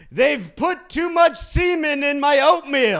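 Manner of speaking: very high, shrill mock yell. Retelling what a friend would yell at breakfast: imitating someone yelling. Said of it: "he would just yell".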